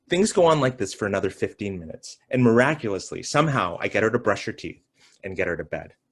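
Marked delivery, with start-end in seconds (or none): none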